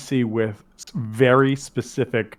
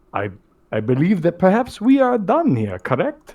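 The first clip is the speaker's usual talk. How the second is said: high, swooping vampire voice; 6 semitones higher than usual. Voicing a character named Ronaldo in a scene, in a Count Dracula voice. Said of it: "I am Dracula right now".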